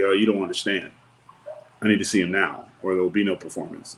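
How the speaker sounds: usual speaking voice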